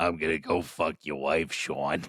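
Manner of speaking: low, taunting, put-on villain voice. Acting out the villain's line to the hero: put-on voice for Castor. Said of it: "that's the voice I'm giving him for the movie".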